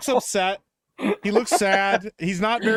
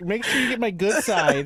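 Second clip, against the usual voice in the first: ordinary delivery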